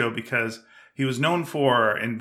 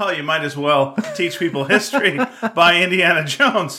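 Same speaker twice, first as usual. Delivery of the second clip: dry, sarcastic tone, clearly play-acted; 4 semitones higher, 5 dB louder than usual. Repeating the other speaker's pitch back to them: imitating a sarcastic remark. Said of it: "Was that sarcastic when I pitched you?".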